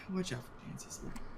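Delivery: hushed, low, quick whisper. A player warning a companion about another character, in a lower voice. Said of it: "I'm just gonna say in a lower voice".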